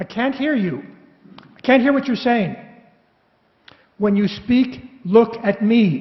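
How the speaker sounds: put-on Irish brogue. Quoting a relentless woman, imitating an irish brogue. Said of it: "This is all said with an Irish brogue".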